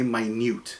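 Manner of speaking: stress on second syllable -nute of minute. Showing how stress changes a word: stress on second syllable of minute. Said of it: "put the emphasis on the second half".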